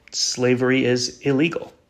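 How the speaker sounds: ordinary talk, nothing marked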